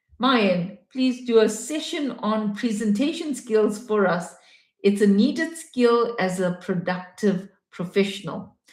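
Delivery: ordinary talk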